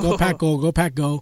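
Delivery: normal talking voice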